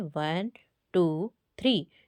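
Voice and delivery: one, two, three counted with a pause after each. Reading lesson on counting aloud, reading with stops: pause after each number. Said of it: "हम पढ़ेंगे इसे रोक कर पढ़ेंगे ... तो इस तरीके से पढ़ेंगे".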